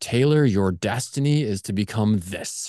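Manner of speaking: booming voice from above. Imagining the movie moment when a voice speaks from the sky, booming voice from the sky. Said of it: "the booming voice from the sky moment".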